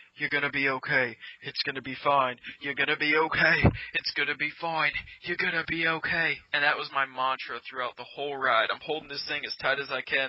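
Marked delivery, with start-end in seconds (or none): 0.2-6.4 bad, failed put-on British accent. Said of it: "I can't do a British accent".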